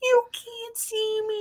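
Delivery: high-pitched, slow, screechy voice.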